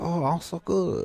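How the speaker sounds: put-on Chinese accent, high, slow, drawn out. Retelling how the lady waiting on the speaker answered: imitating a Chinese accent. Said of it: "she sounded like Chinese".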